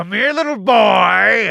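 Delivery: put-on very loud, intimidating, menacing, "boy" stretched out. Standing still outside the smoke cloud, calling out, intimidating. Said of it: "I'm gonna be intimidating".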